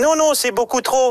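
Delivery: tiny, squeaky critter voice. Retelling negotiating with the Caisse d'Épargne squirrel, in its little voice. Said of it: "avec sa petite voix".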